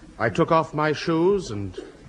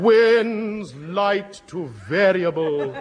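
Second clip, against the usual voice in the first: grave, mournful delivery, words drawn out; 3 semitones higher than usual. A BBC announcer candidate rereads a weather line as though a national catastrophe. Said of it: "say it as though it were a national catastrophe".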